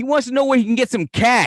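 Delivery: put-on loud, very high-pitched voice with a Boston accent. Retelling what a nearby man blurted out to the clerk, imitating Fenway Joe's Boston accent. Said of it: "fucking Fenway Joe over here goes".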